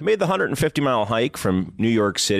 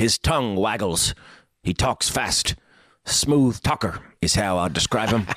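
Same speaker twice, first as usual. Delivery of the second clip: rural farmer's way of talking.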